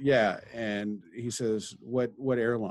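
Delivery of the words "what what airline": imitated very broken English, higher. Retelling what a stranger at the airport said: imitating very broken English. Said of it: "said in very broken English".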